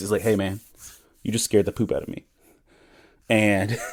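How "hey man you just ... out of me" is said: flat, completely serious acted-out delivery. Retelling what a driver said after being startled: imitating a deadpan delivery. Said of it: "he said it the most deadpan, so serious".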